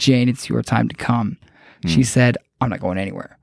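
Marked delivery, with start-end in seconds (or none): 0.0-1.4 very flat, level, unvarying monotone drone. Retelling an abduction story, speaker voices one of the captors addressing Jane, very monotone. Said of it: "said in a very monotone voice".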